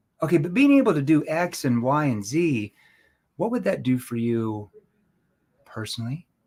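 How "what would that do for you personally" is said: gentle, soft, lowered, empathetic concerned tone. Demonstrating tone while asking a question, in a lowered, concerned tone. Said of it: "I lower my tone into that concern tone, a tone that shows empathy".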